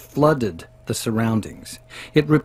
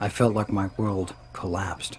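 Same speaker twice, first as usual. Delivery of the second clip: plain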